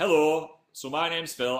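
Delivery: drawn-out, slow, loud Northern English accent. Answering a viewer request to speak northern, in a northern english accent. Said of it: "Speak Northern".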